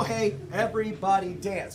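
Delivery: ordinary talk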